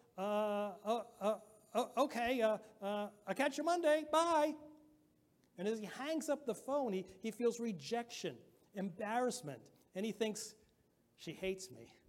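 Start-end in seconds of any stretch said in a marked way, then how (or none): 0.2-4.6 put-on shaky quavering voice, much slower. Acting out a man ending a phone call with a girl, imitating a quavering voice. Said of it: "kind of quavering a little bit".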